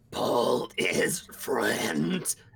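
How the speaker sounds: rough, creaky, grinding mechanical machine voice. Voicing a machine with no voice box, eking out words through mechanical noises. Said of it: "using its mechanical noises, as in fans, grinding computer bits".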